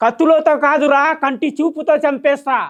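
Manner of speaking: declaimed film-hero voice.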